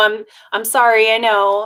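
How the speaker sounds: put-on apologetic tone. Retelling how they used to ask for time off: imitating own past apologetic tone. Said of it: "in a very apologetic way".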